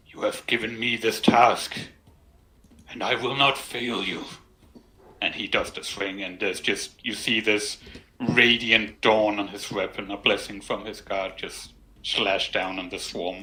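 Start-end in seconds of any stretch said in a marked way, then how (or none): 0.2-4.2 soft, half-whispered voice. A character speaks to his god before a swing, half-whispering a prayer. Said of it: "he's gonna whisper to his god".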